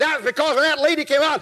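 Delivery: ordinary delivery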